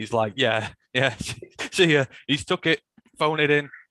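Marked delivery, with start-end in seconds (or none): 0.4-2.1 barely holding back laughter, stifled laugh. Retelling how Brad Holmes closed a trade: imitating Brad Holmes trying not to laugh. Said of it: "trying not to laugh".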